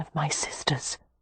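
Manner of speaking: whispered, barely voiced, hushed and very soft. A voice calls Amelia's name at the door and she tells Cam, whispering. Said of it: "Amelia whispered".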